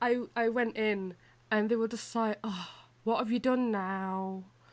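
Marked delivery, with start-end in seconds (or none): 2.4-4.4 put-on weary, exasperated tone. Retelling how they reacted when the speaker went in, mimicking an exasperated tone. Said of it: "just the tone of voice".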